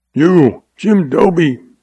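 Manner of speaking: high, raspy, scraped-out voice. Narrating a man who whirls on another to accuse him, rasping. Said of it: "he rasped".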